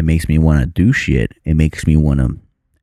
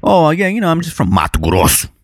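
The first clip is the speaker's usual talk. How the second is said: changed, very high, swooping sing-song put-on voice; 13 semitones higher than usual. Speaker jokes about a place name sounding dangerous, changed tone of voice. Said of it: "I even changed my tone of voice".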